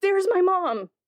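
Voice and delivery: put-on excited child's voice, high and eager.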